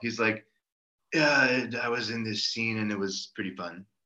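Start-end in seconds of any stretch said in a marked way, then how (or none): 1.1-3.8 bored, flat, uncaring monotone drone. Describing a film commentary track, imitating Bruce Willis sounding uncaring. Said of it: "he just sounds like he doesn't care at all".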